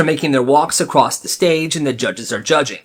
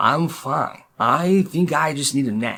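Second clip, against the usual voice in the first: put-on slurred speech, quieter; 4 dB quieter than usual. Retelling what a hurt student said to the coach: imitating Owen slurring his words. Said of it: "now Owen's slurring his words like".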